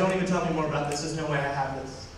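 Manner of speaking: ordinary talk, nothing marked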